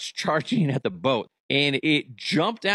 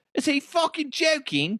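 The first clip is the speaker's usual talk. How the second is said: bad put-on Irish accent, very high pitch; 12 semitones higher than usual. Imitating an Irish listener reacting to his Irish accent: bad Irish accent. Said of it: "That's not even Irish".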